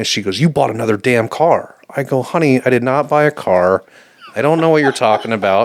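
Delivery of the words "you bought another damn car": furious, accusing-sounding angry tone. Retelling a phone call at work from her, imitating her furious call. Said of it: "she calls me at work, furious".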